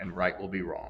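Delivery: ordinary delivery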